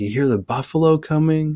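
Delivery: high-pitched, loud hollering delivery.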